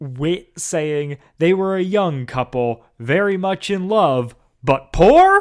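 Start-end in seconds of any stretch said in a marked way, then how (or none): 1.4-5.4 voice lifts upward on the words "but poor". Quoting a line reading from an episode that always stuck out, Wit's rising 'but poor'. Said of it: "the way his voice goes up there".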